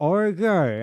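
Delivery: loud, high, mock mangled words with mouth full. Retelling a guy imitating someone with a spoon in his mouth, imitating talking with spoon in mouth. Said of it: "he has like the the spoon in his mouth. I have a marker".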